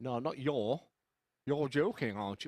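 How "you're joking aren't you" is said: Middlesbrough dialect. Teaching others how to speak Middlesbrough, the speaker models the phrase in a Middlesbrough accent. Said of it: "I'm going to teach you how to speak Middlesbrough".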